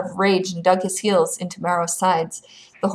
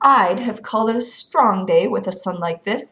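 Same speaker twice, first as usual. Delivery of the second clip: ordinary delivery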